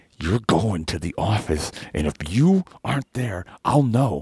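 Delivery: slow, mean, angry talk through clenched teeth. Retelling a threat from a teacher: imitating a teacher talking angrily through clenched teeth. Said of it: "real mean and, like, angry and did that thing where they don't move their jaw".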